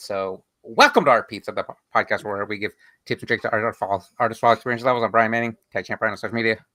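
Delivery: hurried, rushed, rattled-off spiel. Giving the podcast welcome and introduction: rushed, fast talking. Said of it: "I rushed all that".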